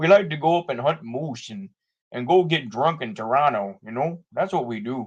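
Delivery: put-on Canadian accent laid over normal speech. Speaker shows off their Canadian accent, a put-on Canadian accent. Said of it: "That's that's my that's my, uh, Canadian accent".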